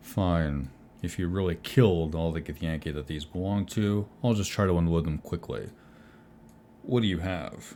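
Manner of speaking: voice dropped a touch. Game master voicing a trader as the players offer him their loot: [name], lowering his voice a bit. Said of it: "He lowers his voice a bit".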